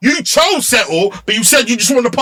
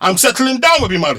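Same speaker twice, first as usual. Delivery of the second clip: ordinary talk, nothing marked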